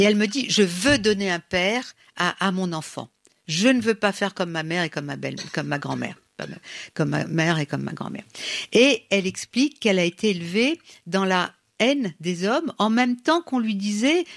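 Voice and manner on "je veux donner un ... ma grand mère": plain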